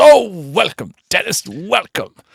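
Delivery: put-on lovely, warm, welcoming old man's voice, high, slow. Retelling how a man stood up and welcomed Denis: lovely old man's voice. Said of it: "he's a lovely old boy's kind of voice".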